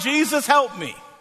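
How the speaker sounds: ordinary delivery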